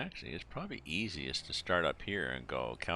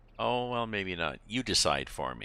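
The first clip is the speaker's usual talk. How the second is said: pointed, raised, passive-aggressive tone; 3 semitones higher, 7 dB louder than usual. Acting out how someone might answer when asked to choose, mock passive-aggressive. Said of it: "be a passive aggressive and say".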